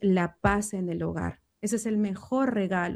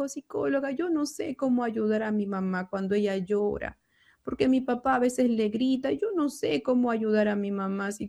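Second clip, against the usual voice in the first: mock child-like crying while speaking; 3 semitones higher than usual. Retelling what a child told the psychologist about his mother, imitating a child crying. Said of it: "y llorando me dijo".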